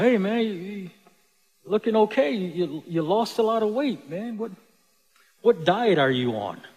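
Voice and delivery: put-on joking tone. Speaker retells what he said to a man he and his brother comforted: retelling a joking remark. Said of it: "jokingly said".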